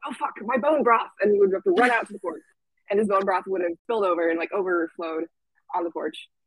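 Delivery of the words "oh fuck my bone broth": put-on slight British accent, pitched up. Speaker retells a guy jumping up mid-meeting, in his little British accent. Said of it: "say in his little British accent".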